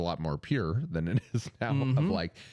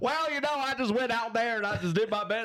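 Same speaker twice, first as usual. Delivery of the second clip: Southern drawl, pitched very high; 13 semitones higher than usual. Retelling a brother's loudspeaker interview after winning a demolition derby: imitating Brett's Southern drawl. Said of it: "my brother had a Southern accent".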